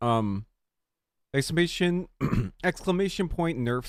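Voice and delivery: talking with mouth full. Going live about a new video while eating a muffin, talking with mouth full. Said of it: "Sorry, I'm still eating".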